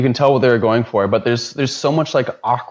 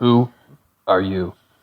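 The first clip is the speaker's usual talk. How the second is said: put-on stifled, bored, flat voice, lower pitch; 4 semitones lower than usual. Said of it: "It's like this stifled".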